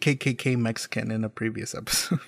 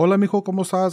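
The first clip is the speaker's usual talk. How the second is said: put-on Mexican Spanish accent; 4 semitones higher than usual. Describing how their dad talks, imitating him speaking Spanish. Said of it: "he's like very Mexican".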